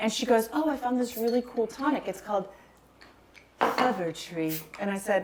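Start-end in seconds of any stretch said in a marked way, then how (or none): 0.5-4.6 put-on faint, light British accent. Retelling her sister's remark about a skinny margarita, in Kelsey's slight British accent. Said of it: "She kind of had a British accent".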